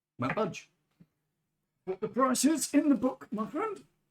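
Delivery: very high, very loud put-on Geordie accent. During a tabletop game, voicing a character refusing to haggle, in a geordie accent. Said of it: "you sound like a Geordie who's been kicked in the nuts".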